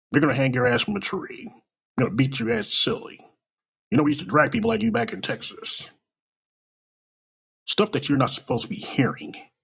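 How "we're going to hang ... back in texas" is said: ordinary talk, nothing marked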